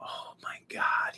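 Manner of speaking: quiet, hushed whisper. Telling how a man at the door saw the puppy, retelling a whisper. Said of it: "He's whispering".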